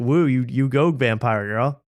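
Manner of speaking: normal talking voice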